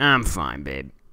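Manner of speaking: very deep biker-type voice. Declining a refill they don't need, the speaker does a motorcycle person impression. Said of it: "my impression of uh, a motorcycle person".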